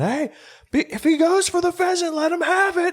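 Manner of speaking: put-on very high, drawn-out yell, rising. Retelling what another hunter's dog owner called out: imitating someone yelling. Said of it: "you could hear him yelling".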